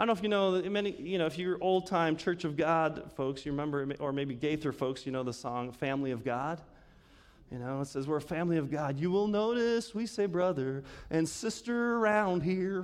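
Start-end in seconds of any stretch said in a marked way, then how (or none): 8.1-12.8 slight country twang. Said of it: "That's my little country twang to it".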